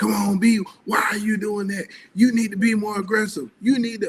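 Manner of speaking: loud, high-pitched hollering. Retelling a mom at her son's game: imitating a mom yelling. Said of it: "yelling at me the whole game".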